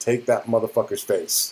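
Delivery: ordinary delivery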